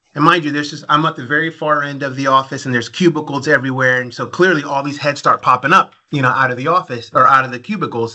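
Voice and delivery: ordinary delivery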